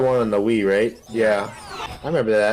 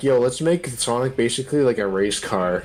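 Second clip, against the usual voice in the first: usual speaking voice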